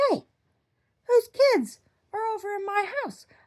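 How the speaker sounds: screaming. Retelling a dream, screaming at women in another room: retelling a scream. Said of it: "And so I was screaming at these".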